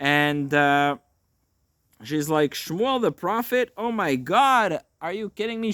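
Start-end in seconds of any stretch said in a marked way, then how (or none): 2.5-5.7 mock, high, shrieking, terrified screech. Retelling a Bible story, voicing the woman asked to raise Shmuel: acting out a terrified screech. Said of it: "She's terrified. She screeches".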